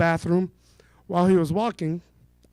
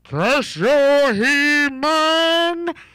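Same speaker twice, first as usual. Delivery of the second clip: high, loud, hammy cartoon villain voice; 7 semitones higher, 5 dB louder than usual. A final voice impression to get a laugh: Skeletor voice. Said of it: "a final voice impression... Here's a Skeletor from He-Man".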